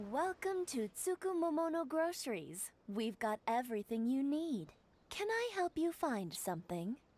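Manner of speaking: voice that sounds like an ai. Greeting a customer at a grocery store, sounding like an AI. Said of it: "You kinda sound like an A I".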